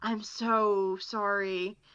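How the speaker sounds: whispered voice. Retelling a story, the speaker repeats an apology, whispering. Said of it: "I just kind of whisper".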